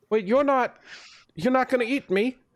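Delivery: terrified, high-pitched, frightened voice.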